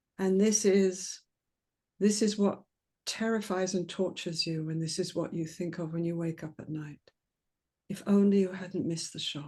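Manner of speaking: dropped voice, low and slow. A speaker demonstrating a reply to someone, dropped voice, low and slow. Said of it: "I've already dropped my voice and gone low and slow".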